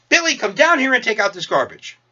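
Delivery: high-pitched, loud hollering yell. Retelling a mother calling up the stairs to someone, imitating a mother yelling. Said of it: "yells up the stairs".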